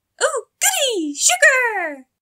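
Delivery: relieved squeal, very high-pitched and loud. Pinkie Pie, told the salad has natural sugars, squealed. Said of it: "Squealed Pinkie Pie".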